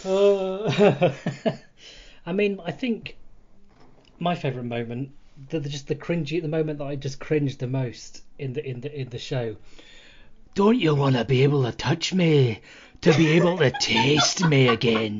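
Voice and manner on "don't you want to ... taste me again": loud put-on Scottish accent. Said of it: "making fun of his accent".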